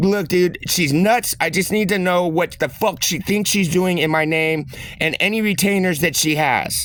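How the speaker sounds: ordinary delivery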